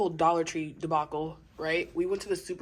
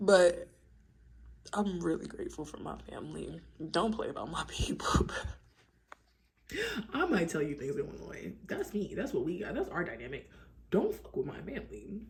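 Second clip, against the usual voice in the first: soft, slightly emotional, full of feeling; 5 dB quieter than usual. Speaker talking about gratitude for family: a little emotional. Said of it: "I got a little emotional".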